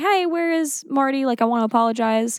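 casual high call-out. Recapping a scene where Nate comes back, imitating Nate talking very loudly. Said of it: "talking very loudly".

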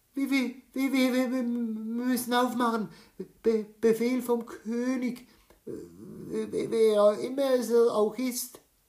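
shrill, very high, loud stutter, trembling with fear. The hare, with someone at the door, stammers to the lion in fear. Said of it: "stammelte der Hase und zitterte an allen Gliedern".

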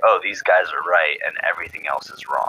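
ordinary talk, nothing marked

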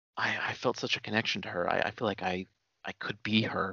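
gentle, low, soft-spoken, stumbling murmur. Retelling what a web sleuth kept saying, imitating a soft-spoken man. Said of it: "He had a very soft spoken voice".

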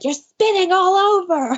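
screech pitched way up very high. Recapping the show after Dorinda got close to Luann, imitating Ramona screeching. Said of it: "Ramona screeching like".

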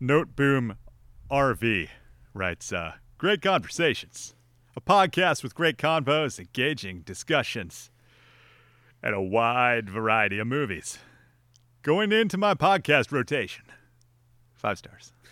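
dopey, dim-witted cartoon henchman voice, reading aloud. Speaker reads a listener's podcast review aloud: Kronk voice. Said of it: "I'll read it in Kronk voice".

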